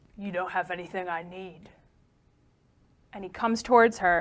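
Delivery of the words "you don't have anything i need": soft, warped, distorted, garbled voice. Narrating a figure answering her, in a distorted, garbled voice. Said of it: "in this distorted, garbled voice".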